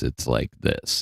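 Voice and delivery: deep voice. Showing the chat what the low voice sounds like: low voice. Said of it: "when I do my low voice".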